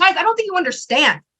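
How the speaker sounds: hyped, high-pitched, excited voice. Recalling promoting an Instagram live to people, acting out getting hyped. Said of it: "I still would get hyped".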